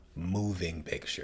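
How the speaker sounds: stress on "moving", drawn out slowly.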